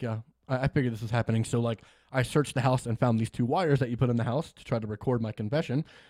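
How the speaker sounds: plain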